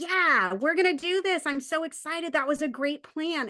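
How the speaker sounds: eager, enthusiastic, excited. Showing how the tone changes once the problem is fixed, excited tone. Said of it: "And then they hear that excitement".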